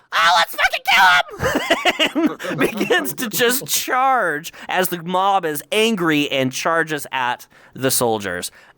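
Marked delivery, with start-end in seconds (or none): 0.1-2.3 very high, tiny, swooping little voice. Narrating a mob charging soldiers, in a famous little voice. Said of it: "a famous little voice go".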